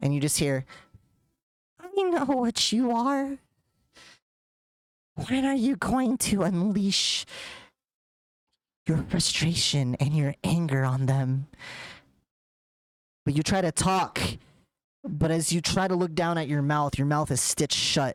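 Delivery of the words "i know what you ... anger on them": dark, menacing, sinister hag's voice. Narrating a voice that comes through someone's face, speaking in a sinister hag voice. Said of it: "some sort of like hag voice that comes through".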